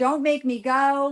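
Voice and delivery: acted hysterical, overwrought outburst, high and drawn-out. Retelling how Bree came out of her bedroom, the speaker imitates Bree, hysterical. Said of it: "like hysterical".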